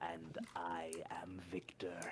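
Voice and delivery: rough character voice pitched way down low. A character introduces himself to the group: rough Victor voice. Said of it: "It's a rough voice".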